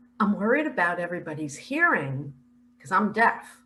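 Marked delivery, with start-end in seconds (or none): none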